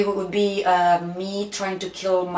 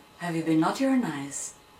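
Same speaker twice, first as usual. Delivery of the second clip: eerie, unsettling, teasing put-on voice; 2 semitones lower, 4 dB quieter than usual. Asking a playful christmas question: mock creepy tone. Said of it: "That sounded so creepy".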